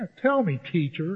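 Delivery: dry tone dripping with sarcasm. Acting out Simon answering the teacher: imitating sarcastic Simon. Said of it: "I don't know if he's being sarcastic".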